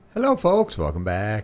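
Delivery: very low, soft, subdued low-energy delivery. Greeting the viewers as the show opens: very low-key delivery. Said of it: "Very low key".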